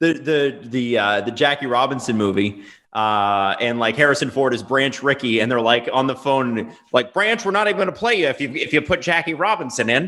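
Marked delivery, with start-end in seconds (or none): 7.1-10.1 put-on quick, pitched-up old-timey 1940s voice. Retelling a phone call to Branch in the Jackie Robinson movie, in an old-timey 1940s voice. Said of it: "What was that voice?".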